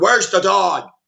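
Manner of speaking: put-on intimidating, threatening voice. Retelling how Superman confronts Lex about the dog: imitating an intimidating demand. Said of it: "He's trying to intimidate Lex".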